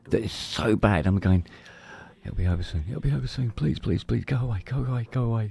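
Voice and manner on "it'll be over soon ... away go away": put-on high, desperate, repeated pleading tone. Retelling pleading for chest pain to stop at night: retelling own desperate pleading. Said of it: "Like this".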